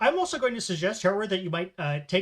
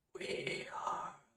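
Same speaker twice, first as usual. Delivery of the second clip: very soft, barely voiced, faint dying whisper. Game master voicing a dying zombie meeting the player's gaze, whispering last gasp. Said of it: "it kind of whispers in a last gasp".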